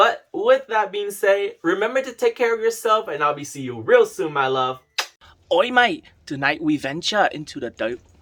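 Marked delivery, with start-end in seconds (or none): 5.5-8.0 amateur put-on Australian accent. Speaker admits they can't do the accent, then tries an Australian accent. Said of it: "I don't know how to do an Australian accent".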